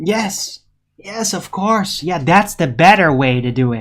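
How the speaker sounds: sarcastic, meaning the opposite of the words. Mocking an approach they disagree with to a listener: sarcastic. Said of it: "I'm being sarcastic right now".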